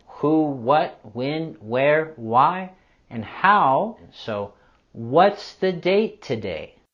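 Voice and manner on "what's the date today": pitch falls at the end on today. Pronunciation lesson, modeling a W H question with falling intonation at the end. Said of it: "we want to have our intonation falling at the end".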